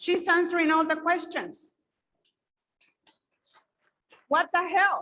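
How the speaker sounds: openly upset voice. A longtime resident complaining at a community meeting, upset. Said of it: "I'm getting very upset".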